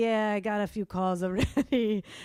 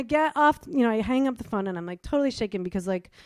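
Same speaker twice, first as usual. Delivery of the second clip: plain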